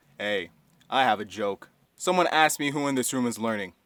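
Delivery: very low, flat, unbroken deadpan monotone drone. Describing a to-the-point teacher telling a joke, in Mister O's low monotone. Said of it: "He spoke in a low monotone voice".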